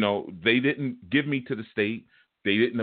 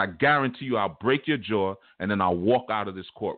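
plain

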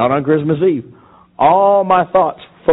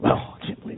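whispered, hushed, breathy grumbling mutter. Retelling stuffing his gifts back into the sacks on a bench, grumbling mutter. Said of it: "just kind of mumbling, grumbling".

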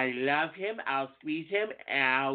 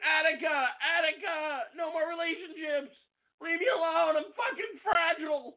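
put-on shrill scream, pitched very high. Telling the listener they sound like a 60s protester, the speaker is mock screaming like one. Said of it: "Fucking sound like you should be screaming".

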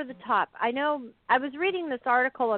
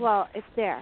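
put-on sassy, snarky, condescending and dismissive tone; 3 semitones lower than usual. Retelling what she said at the counter: imitating someone being snarky. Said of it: "And then she got really snarky with me".

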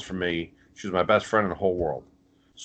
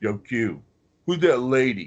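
put-on New Jersey street accent, laid on thick; 4 semitones higher than usual. Retelling what the man crashing downstairs at his house said, imitating a new jersey accent. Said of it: "Because that's how he talks. He's in Jersey".

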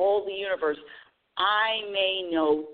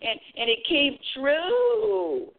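very high, drawn-out, goofy put-on voice; 10 semitones higher than usual. Telling a vision board success story in a funny put-on voice. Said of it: "Sorry, I'm doing that funny voice".

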